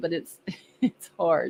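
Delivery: talking through stifled laughter. Reading viewer comments aloud, trying not to laugh: laughing while talking. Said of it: "trying to get through it without laughing".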